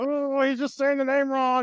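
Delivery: high, slow, mocking know-it-all voice.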